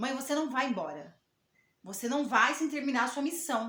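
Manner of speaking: acted grave authoritative voice, loud and serious. Retelling what a four-year-old said during a hard moment, imitating Vitor speaking seriously with authority. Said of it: "falou bem sério, com autoridade".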